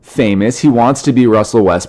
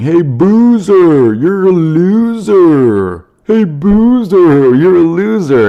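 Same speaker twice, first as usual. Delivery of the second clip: very slow, drawn-out, pitched-up, taunting yell, acted; 8 semitones higher, 3 dB louder than usual. Retelling a fan heckling a player at a free throw: imitating a fan yelling. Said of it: "the guy is yelling".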